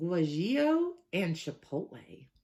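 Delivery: best fake Southern US accent. Hot sauce review, listing a sauce's peppers in a put-on southern accent. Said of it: "I said that in my finest Southern accent".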